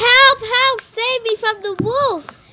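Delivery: shrill, very loud, high, drawn-out shouting. Narrator reads a call for help through the door, loudly shouting. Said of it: "loudly shouting".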